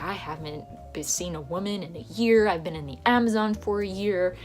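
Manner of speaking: ordinary talk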